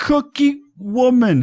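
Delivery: put-on high stammering child voice.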